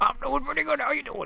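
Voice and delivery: weird, very high-pitched put-on voice. Voicing Business Enderman answering a greeting on voice chat: weird Business Enderman voice. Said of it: "He's got a weird voice".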